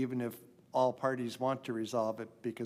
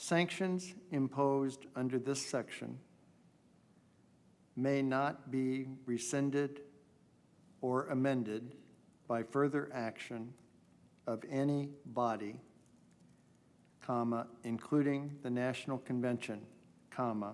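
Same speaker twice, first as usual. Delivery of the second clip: slow, deliberate reading voice. Asked to say it slower, speaker rereads the bylaw text: slower dictation. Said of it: "could you say that slower?".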